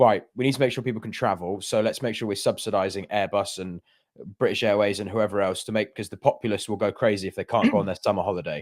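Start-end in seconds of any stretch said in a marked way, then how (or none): none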